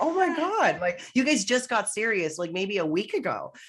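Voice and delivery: high-pitched, incredulous tone. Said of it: "It's like".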